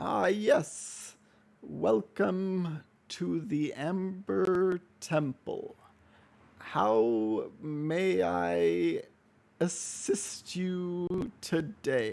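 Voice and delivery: put-on very slow, drawn-out, unhurried ancient old man voice. Voicing the figure who greets you at the Amber Temple, talking really slow. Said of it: "And he's talking real slow".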